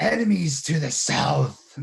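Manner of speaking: rough, booming growl, very loud and high. Narrator voices Garak announcing from the caravan tops, booming growly voice. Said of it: "in his his his best growly voice".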